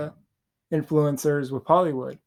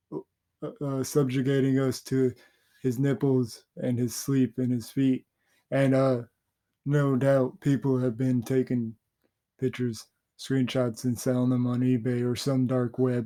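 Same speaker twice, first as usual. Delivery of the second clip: put-on deadpan commentary voice; 2 semitones lower than usual. Imitating a commentator ranting about a long stream ending: Moist Critical impression.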